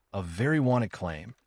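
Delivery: normal talking voice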